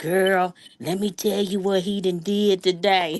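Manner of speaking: gossipy, hushed half-whisper. Recalling how Maddie used to call on the phone, imitating Maddie half-whispering. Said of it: "used to call and be whispering".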